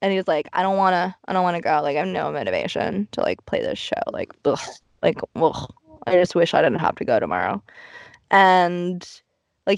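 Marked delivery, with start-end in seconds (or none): 0.5-7.6 lower put-on muttering voice. Retelling a complaint about not wanting to play tomorrow's show: imitating Kenny muttering under his breath. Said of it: "he says it under his breath".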